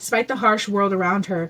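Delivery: plain reading voice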